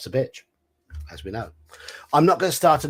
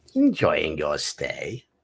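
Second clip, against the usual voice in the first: sneering voice with pitch swooping around; 6 semitones lower than usual. Voicing city guard head Captain Snide at a cell door, sneering. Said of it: "I've got to do a snidey voice".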